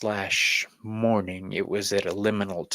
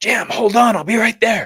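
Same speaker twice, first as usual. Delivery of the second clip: shouted out, very high and very loud; 13 semitones higher, 11 dB louder than usual. Retelling calling out a hotel room door to a friend: retelling a yell. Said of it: "I yelled out".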